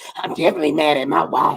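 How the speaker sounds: low, raspy, soft little mutter. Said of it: "with his little raspy voice".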